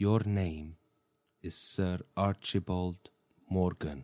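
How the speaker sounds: hushed, very quiet, very slow half-whisper. Taking a character by the shoulders so no one hears: half-whispering. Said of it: "I'm gonna whisper".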